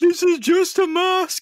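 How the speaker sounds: desperate screaming, high and loud.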